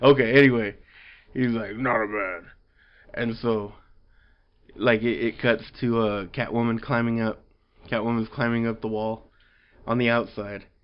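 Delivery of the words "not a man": exaggerated growling put-on voice. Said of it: "That voice is so stupid".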